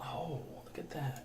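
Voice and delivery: hushed, soft, slow whispered aside.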